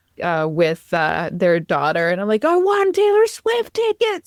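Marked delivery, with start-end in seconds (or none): 2.5-4.3 put-on yell, higher pitch. Retelling calling across the street to a friend: imitating her own yell. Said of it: "I yelled at them".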